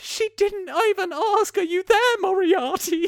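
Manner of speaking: poshest put-on accent, very high. Recapping a film, the mum cradling her daughter speaks: poshest accent. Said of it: "the mum goes in the poshest accent".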